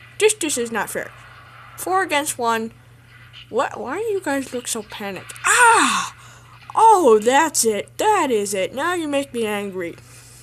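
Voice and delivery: booming, very loud dinosaur voice. Voicing a dinosaur outnumbered four against one, in a dinosaur voice. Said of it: "I'm going to be doing the voice of the dinosaur".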